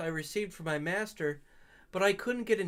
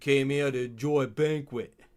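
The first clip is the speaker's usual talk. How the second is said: put-on Southern accent, low and pitched lower; 6 semitones lower, 4 dB louder than usual. Voicing the character Damien, low Southern Damien voice. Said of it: "It's like a low Southern voice".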